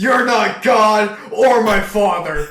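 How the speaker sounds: high, loud, enraged, furious outburst. Retelling a short man's reply to a stranger in line: imitating someone in a fury. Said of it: "in his little fury".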